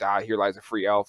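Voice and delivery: plain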